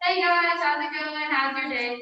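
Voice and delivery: loud voice projected to fill the room. Showing how to introduce yourself to a spread-out room: projecting voice across the room. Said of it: "we can do an example first".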